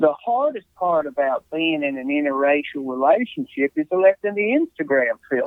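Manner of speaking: put-on, stretched-out Southern drawl accent. Reading a game card aloud in an assigned southern drawl accent. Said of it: "my accent is Southern drawl".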